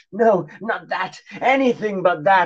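slightly worried outcry. Narrator voicing Johnny, finally a little worried, crying out to the old lady. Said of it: "cried Johnny, who was finally a little worried".

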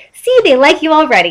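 happy, pleased, cheerful, high voice. SpongeBob drags Jack along through the town: happily. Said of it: "SpongeBob said happily".

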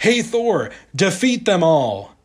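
bold, eager, rallying tone. Retelling a comic where the captured Jane defies her captors: Jane, defiantly eager.

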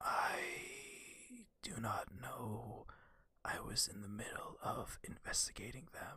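theatrical stage whisper. Answering a player's question in character: stage whisper. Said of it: "sorry, stage whispering".

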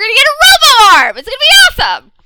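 high, loud, fast excited gushing.

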